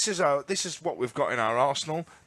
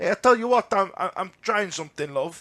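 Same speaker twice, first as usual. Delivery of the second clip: horrible put-on Portuguese accent; 3 semitones higher, 4 dB louder than usual. Imagining the words behind a saturday lineup change, in a put-on portuguese accent. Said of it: "That's that's my Portuguese accent".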